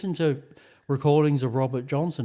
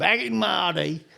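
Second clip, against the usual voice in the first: put-on old man voice, much higher; 4 semitones higher than usual. Ranting with a co-host about e-scooters, old man voice. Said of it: "if you did that in an old man voice".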